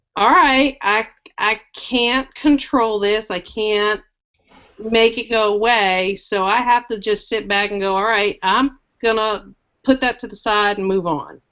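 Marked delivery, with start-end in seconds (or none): none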